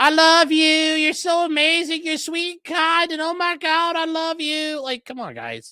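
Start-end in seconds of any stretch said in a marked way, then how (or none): 0.0-4.8 mock derisive, overdone sweetness, high and drawn out. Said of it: "She's like".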